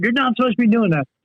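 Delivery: high, angry scolding voice. Retelling what the teacher said after getting pissed off: imitating an angry teacher. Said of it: "and he got all pissed off".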